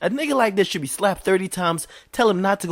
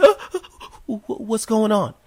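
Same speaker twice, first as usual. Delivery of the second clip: mock flustered, high, bewildered stumbling stammer; 5 semitones higher than usual. Imitating a bank customer watching the robber: imitating a confused bystander. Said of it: "and you're like".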